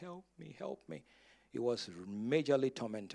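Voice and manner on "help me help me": acted tearful, crying, pleading whisper. Retelling a tormented man who jumped at the speaker, imitating someone pleading. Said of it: "was basically pleading with me".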